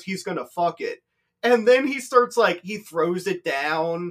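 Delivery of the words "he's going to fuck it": joking delivery. Retelling what Greg said, leaning over to the speaker: retelling a joking remark. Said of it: "jokingly leans over to me and goes".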